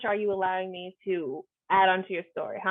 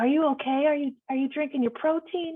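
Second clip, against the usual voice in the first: higher, overbearing, fussing big-brother nagging voice; 7 semitones higher than usual. Retelling how the game master voiced a player's brother: voicing the player's brother. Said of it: "I just had the brother saying crazy stuff".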